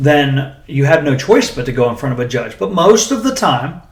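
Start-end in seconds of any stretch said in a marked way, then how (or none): 2.6-3.7 "most" drawn out, slow and high-pitched. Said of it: "emphasis on most".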